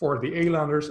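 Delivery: normal talking voice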